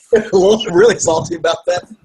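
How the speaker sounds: high, loud, laughing, salty griping tone.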